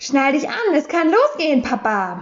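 happy, eager, bright, cheerful voice. A narrator reads a character urging its papa in the car, cheerful. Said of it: "sagte es fröhlich".

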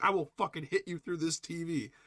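mock very high, furious, fed-up old man voice. Acting out a grandfather's threat at the tv: imitating angry grandfather. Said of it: "Grandpa's like".

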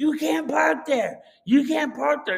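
man screaming like a maniac, high and furious. Retelling eating in the car, voicing a guy who screamed at them: retelling a man screaming. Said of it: "I hear this person screaming".

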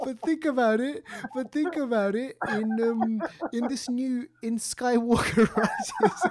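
cracking up while speaking. Trying to make a point to the other speaker: laughing while talking. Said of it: "The more you laugh".

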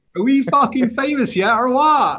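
accent of Somerset. Asked by the host to say the line in a Somerset accent. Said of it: "Somerset. Like yours".

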